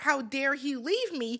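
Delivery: ordinary delivery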